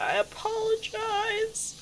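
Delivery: very high, soft, squeaky, cutesy little voice.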